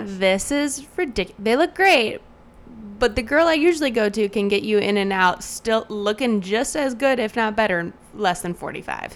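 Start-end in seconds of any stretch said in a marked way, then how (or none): none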